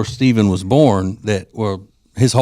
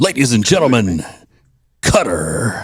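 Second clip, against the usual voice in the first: grand, big-voiced announcer man voice. Host reads out aggressive baby name examples: big voice guy voice. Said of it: "I had to read them in the big voice guy voice".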